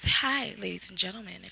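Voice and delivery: very low, very soft, hushed, seductive sexy voice. Giving the call-in number to listeners, put-on sexy voice. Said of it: "I'm doing my sexy voice".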